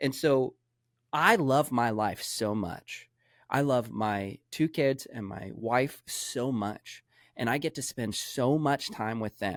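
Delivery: slow, moved, heartfelt emotional delivery. Explaining why you really work and earn money: emotional. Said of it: "it makes me emotional as I'm talking about it now".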